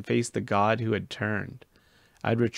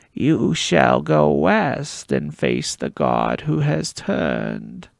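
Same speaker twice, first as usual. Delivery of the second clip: rasping voice, raised in volume; 2 semitones higher, 6 dB louder than usual. Reading a novel aloud, a character speaks in the raspy voice of the Oracle. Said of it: "spoke in the raspy voice of the Oracle".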